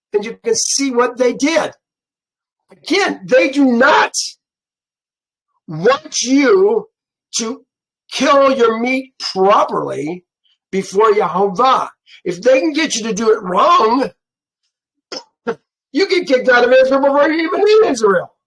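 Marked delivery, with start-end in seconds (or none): 2.7-18.2 fervent, earnest, passionate and insistent preaching tone. Reading and explaining scripture to listeners, with a raised voice. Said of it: "I know I raised my voice".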